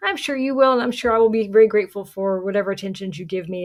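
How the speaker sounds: heavily sarcastic, dripping with sarcasm. Retelling a scene where De Vries answers the Baron: imitating De Vries being sarcastic. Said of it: "really, really kinda sarcastic".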